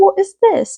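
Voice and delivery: put-on Australian accent, very high-pitched. Acting out a story character finding the key: Australian accent. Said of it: "his Australian accent".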